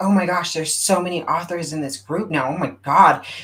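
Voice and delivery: really negative, disapproving, complaining tone. Retelling what a woman at a meeting said: imitating a really negative tone. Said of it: "in a really negative tone".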